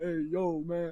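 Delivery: put-on deep voice dropped to a bass tone. Retelling how he grew more comfortable: imitating his deep voice. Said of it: "he starts going into a deep like".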